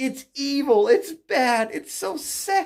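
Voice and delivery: laughing while talking. Speaker ranting about politics, laughing while talking. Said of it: "I'm laughing so hard".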